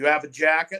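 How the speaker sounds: loud, put-on New England accent. Retelling a man's question to him, in a new england accent. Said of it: "in that New England accent".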